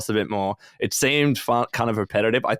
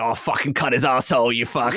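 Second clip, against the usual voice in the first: put-on Australian accent; 2 semitones higher than usual. Retelling what the talking knife in the game said: imitating an Aussie accent. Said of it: "he had this real Aussie accent".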